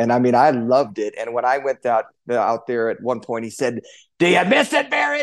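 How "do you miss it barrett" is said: put-on raspy voice at a very high pitch. Retelling what a coach asked you when you went out there, imitating a raspy voice. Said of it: "he's got that raspy voice".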